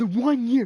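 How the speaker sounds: shrill, very high, loud, worked-up furious outburst. Retelling being told to calm down: imitating own angry outburst. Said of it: "Bro, calm down".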